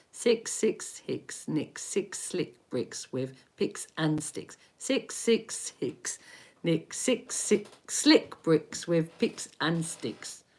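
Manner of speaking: hushed, breathy, soft, rushed rattling. Asked to say a tongue twister fast five times, speaker tries: saying it fast. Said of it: "Say it fast, five times".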